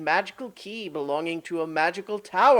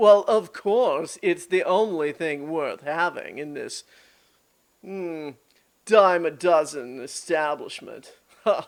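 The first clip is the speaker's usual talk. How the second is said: snooty, haughty, entitled spoiled-brat voice; 3 semitones lower than usual. Voicing a rich, entitled half-elf brat at an auction: rich entitled brat voice. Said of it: "he is every rich, entitled brat you've ever seen".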